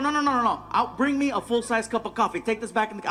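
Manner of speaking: ordinary delivery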